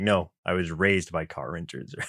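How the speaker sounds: mock grave, low, completely straight, very serious. Retelling a cartoon scene where he answers the renters: very serious tone. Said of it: "It's very serious".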